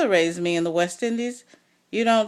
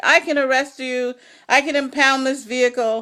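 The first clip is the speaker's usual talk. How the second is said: wild, out-of-control, hysterical, frantic screaming; 4 semitones higher, 4 dB louder than usual. Retelling a man who jumped out at a gas station, imitating hysterical screaming. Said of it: "he was screaming hysterically".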